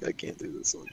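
put-on disappointed tone. Mimicking a friend who said they couldn't do this one, mock-disappointed. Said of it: "You sounded so disappointed".

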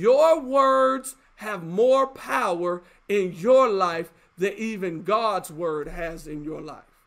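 very slow, low, deliberate, word-by-word delivery. Announcing this will be said slow for the listeners, said slowly. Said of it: "I'm gonna say this slow".

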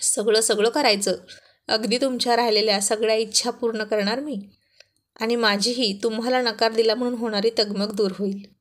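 ordinary delivery

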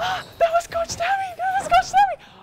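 play-acted, shrill, very high shrieking scream. Retelling watching a movie, speaker acts out her roommate; imitating roommate screaming. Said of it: "she just started screaming".

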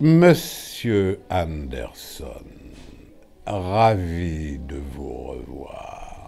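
loud, slow, drawn-out delivery. Asked on air to do it, the speaker performs the greeting in Agent Smith voice. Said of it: "Vous pouvez d'ailleurs nous faire l'agent Smith".

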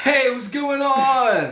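surfer dude voice, drawn out and stretching on. Prank calling a store clerk, playing a surfer dude: surfer dude voice. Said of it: "I'm gonna be like a surfer dude".

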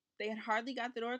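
ordinary delivery

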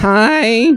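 "hi" stretched out, very high and nasal. Meeting an alien in a skit, doing a high-pitched nasal Fran Drescher voice. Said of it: "Really high-pitched and annoying, just nasally".

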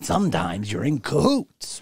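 slow, deliberate, unhurried delivery. Musing on the word cahoots, doing a George Carlin impression. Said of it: "I feel like George Carlin, where I'm like".

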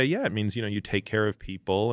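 ordinary talk, nothing marked

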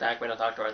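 normal talking voice

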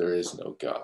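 very quiet, flat, machine-like monotone. Retelling what Brayden said when someone talked about God: imitating Brayden, robotically. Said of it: "like just robotically".

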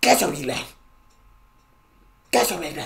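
forceful, authoritative chest voice from the sternum, rising. Showing how the German word should be said: saying it with your chest. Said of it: "you gotta say it with your chest".

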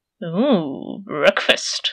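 low, hungry growled words in a big cat voice. Woken carefully by a squirrel, a leopard staring at it, growling. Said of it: "Leopard growled".

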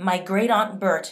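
steady, resolute. She lies in answer to an officer beside a casket: firm voice. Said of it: "in a firm voice".

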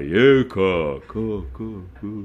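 low, deep bass voice with echo. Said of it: "משם קול בס כזה".

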